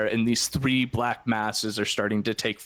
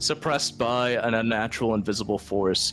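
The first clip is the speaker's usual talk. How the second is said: ordinary delivery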